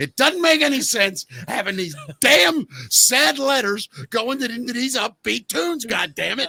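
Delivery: mock furious rant, high, voice swinging wildly. Retelling an outtake where Casey Kasem loses it: imitating Casey Kasem losing it. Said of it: "he just loses it".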